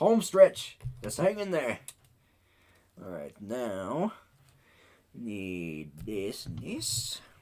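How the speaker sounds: Wild West cowboy voice. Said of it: "I'm actually talking like a cowboy now".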